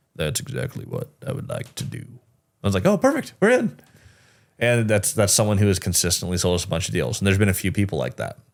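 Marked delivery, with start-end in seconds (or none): 0.2-2.1 very deep, breathy, hushed near-whisper. Retelling what a dealmaker replied, in a super deep voice. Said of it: "he's super deep voice too".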